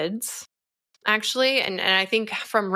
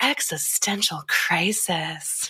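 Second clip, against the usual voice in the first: put-on sexy, mock-seductive voice; 2 semitones lower than usual. Describing a video they made, put-on sexy voice. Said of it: "in a sexy voice".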